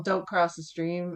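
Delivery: plain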